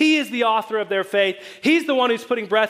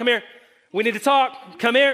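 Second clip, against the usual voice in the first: mock-stern scolding parent tone. Describing how he starts, like a parent addressing children: mock-stern parent scolding children. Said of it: "He's like a parent addressing some children, like, ... that's kind of the tone".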